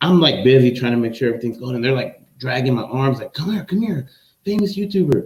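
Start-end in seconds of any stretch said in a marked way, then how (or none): 3.3-5.3 put-on very high, eager, excited children's voices. Retelling kids dragging him by the arms: imitating excited kids. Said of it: "they were all excited".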